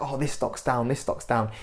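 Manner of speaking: plain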